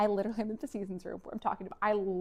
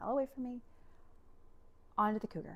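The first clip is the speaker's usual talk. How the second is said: acted sobbing, words barely out, much quieter; 3 semitones higher, 5 dB quieter than usual. Retelling own words to him back then, imitating sobbing and barely getting them out. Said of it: "I'm just sobbing and barely getting it out".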